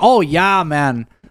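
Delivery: put-on high Wisconsin accent. Speaker imitates how a guy from Wisconsin said every sentence: imitating a Wisconsin guy. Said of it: "like he would".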